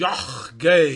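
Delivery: put-on heavy central Polish accent. Retelling the Amshinava Rebbe's reply to students, heavy central Polish accent. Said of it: "with his heavy central Polish accent".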